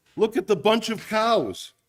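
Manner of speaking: put-on Yiddish accent. Playing a character in a two-person joke, in a Yiddish accent. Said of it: "you have to do this in a Yiddish accent".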